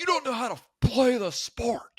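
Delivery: very high, shrill scolding shout. Retelling being yelled at by people who never played: imitating someone yelling. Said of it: "to get yelled at by people".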